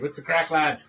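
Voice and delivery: put-on Irish accent, sounding native. Joking about being sent off to ireland, greeting the lads: put-on irish accent. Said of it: "like a native".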